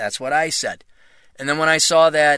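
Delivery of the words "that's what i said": ordinary delivery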